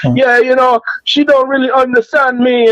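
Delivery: very high, put-on Jamaican accent. Retelling what a Jamaican man said about dating in the Philippines, imitating a Jamaican accent. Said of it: "listening to this Jamaican dude one time".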